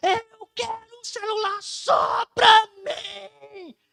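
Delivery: put-on child's shout, very slow, stretched-out, high. Retelling how a boy answered his mother: imitating a boy yelling. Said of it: "ele gritou desse jeito".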